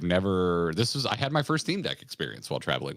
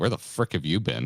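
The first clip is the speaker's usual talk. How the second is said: mock incredulous, disbelieving, teasing tone. Retelling what the other speaker said at the airport: imitating a friend's incredulous delivery. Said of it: "delivery in your voice that was like".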